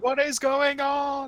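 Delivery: very high, very slow, drawn-out yell. Playing a character in the game, shouting out: shouting out. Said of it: "I'm gonna shout out".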